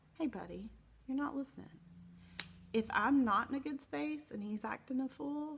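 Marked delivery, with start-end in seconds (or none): 0.2-1.6 calm, level, even voice, quick. Showing how to address him when he is not listening, in a calm voice. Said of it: "I can say in a calm voice".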